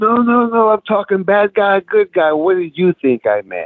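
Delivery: light put-on French Canadian accent, sing-song. Telling a story, the speaker quotes a man he knocked over: slight French Canadian accent. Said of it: "A little French Canadian accent".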